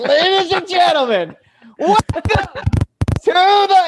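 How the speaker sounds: put-on screamed voice. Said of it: "I'm screaming so loud you can hear me".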